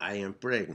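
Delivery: put-on Spanish-accented English, plain delivery. A comedian retells a woman's answer to why she is here, in a spanish accent. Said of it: "in her Spanish accent".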